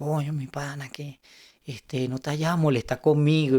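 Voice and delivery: mock innocent, sheepish little voice. Retelling a buddy's phone call, imitating an innocent 'it wasn't me' little voice. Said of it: "Con esa vocecita de yo no fui".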